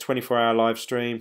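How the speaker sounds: ordinary delivery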